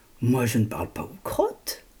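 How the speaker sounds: haughty, scornful, low swooping disdainful voice. Narrator voices the apple answering the admiring dropping: disdainful. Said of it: "La pomme répond avec dédain".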